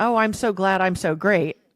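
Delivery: plain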